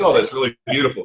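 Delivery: sarcastic coach voice.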